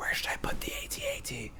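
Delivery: high, soft, unvoiced whisper. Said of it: "tried to whisper".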